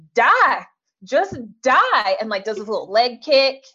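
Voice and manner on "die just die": put-on Southern accent, pitched higher. Retelling a TV wedding scene where the bride's mother reacts: imitating Diahann Carroll, so Southern. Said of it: "It just was so Southern".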